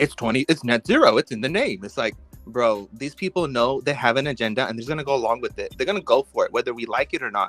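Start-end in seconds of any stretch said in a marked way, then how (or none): 0.0-1.8 swooping, dripping with sarcasm. Recounting a parliament exchange, the speaker quotes a woman's answer, imitating a sarcastic reply. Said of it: "she came at sarcastic as fuck".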